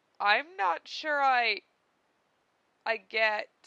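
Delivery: croaking voice. Karkat, sinking back into his chair, croaks out an answer. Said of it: "he croaked out".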